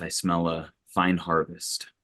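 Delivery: quiet under-breath muttering. Voicing a character trudging into the woods: quietly under the breath. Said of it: "say quietly under my breath".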